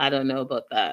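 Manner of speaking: dry, expressionless deadpan at a very low pitch. Retelling how a man answered a woman's remark, retelling a deadpan reply. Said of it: "deadpan says".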